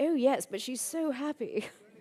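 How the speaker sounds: fake English accent. Replying to passers-by about their muddy dog, in a fake english accent. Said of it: "in my fake English accent".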